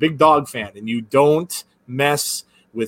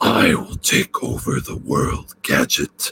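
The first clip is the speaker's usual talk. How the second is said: slow, throat-straining villain voice; 11 semitones lower than usual. Doing a cartoon villain's line as Doctor Claw: Doctor Claw voice. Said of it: "that really killed my voice".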